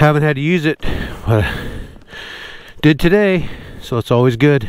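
winded, breathing hard and heavily between words. Out adventure bike riding off-road, talking between efforts with heavy breathing. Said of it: "Sorry for the heavy breathing".

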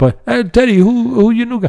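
put-on Spanish accent. Retelling friends asking Teddy about his new guy, put-on Spanish accent. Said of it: "putting on that accent".

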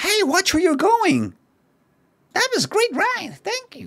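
very high, swooping arcade game character voice. Doing voice acting in the style of a game customer; Crazy Taxi customer voice. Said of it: "I'll try and do the voice acting in the style of a customer in Crazy Taxi".

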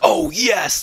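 play-acted eager, delighted, excited, high-pitched. Retelling the lady's reply when asked for the game: imitating someone getting excited. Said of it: "she just got really excited".

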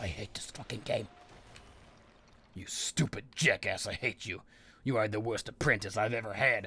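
furious, hateful, pissed-off tirade, low and hushed. Raging at a game after a plan got ruined, furious. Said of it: "I'm so fucking pissed off".

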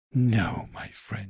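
hissed, hissing delivery. A weasel creeping closer answers a rabbit's questions, hissing. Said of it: "she hissed".

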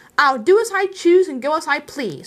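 stubborn insistent voice. Refusing a friend's demand to give something up, said obstinately. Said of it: "said Bilbo obstinately".

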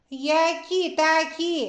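cheerful, merry, spoken through a laugh. A little princess answers a suspicious dragon, laughing merrily. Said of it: "весело засміялася принцеска".

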